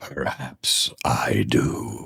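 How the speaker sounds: breathy, sepulchral whisper like a corpse. Answering adventurers who ask for guidance, in a sepulchral voice from the grave. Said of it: "His voice sounds like it's like sepulchral".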